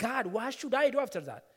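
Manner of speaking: acted, tearful, crying, pleading. Recounting a whole night spent crying over a poor house, retelling a tearful plea. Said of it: "the whole night I was crying".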